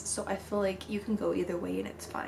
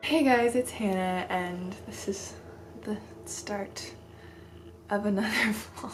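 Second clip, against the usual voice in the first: sleepy, drowsy, barely awake voice. A vlogger opens another vlog just after waking from a nap, barely awake. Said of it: "I just woke up from a nap and I'm barely awake".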